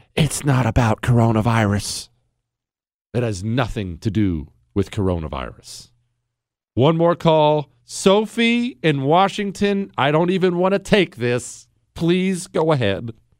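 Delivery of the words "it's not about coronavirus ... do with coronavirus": hushed whisper with much lower pitch. A call-in host tells listeners to lean in, then starts whispering. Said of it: "I'm going to whisper".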